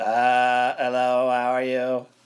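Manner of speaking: put-on vocoder voice. Remembering a childhood mailman who used a vocoder, imitating his vocoder voice. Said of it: "he had one of those vocoders".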